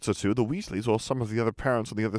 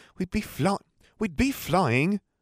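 offended, indignant, much higher, slower; 7 semitones higher than usual. Narrator reads a boy's retort to his sister, indignant. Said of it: "said Ron indignantly".

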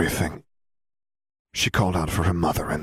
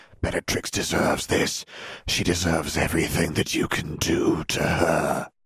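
ordinary delivery

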